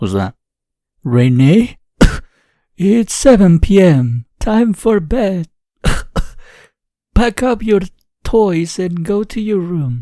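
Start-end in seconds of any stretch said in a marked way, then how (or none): 1.0-10.0 bad, clumsy, high, slow put-on grandma voice. In a story, Grandma tells Renee it is time for bed, bad grandma voice. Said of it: "I totally suck at making Grandma's voice".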